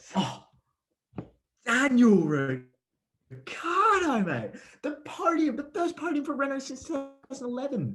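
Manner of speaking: very high-pitched voice that keeps climbing, swooping chatter. [name] naming his MVP of the previous weekend, high-pitched voice. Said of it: "Why does my voice keep going higher?".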